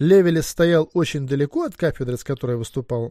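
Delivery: ordinary delivery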